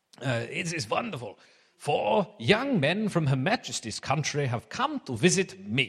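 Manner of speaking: put-on German accent drifting toward Russian. Speaker retells a vice chancellor welcoming four young men, put-on accent, a bit Russian. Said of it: "sorry about the accent".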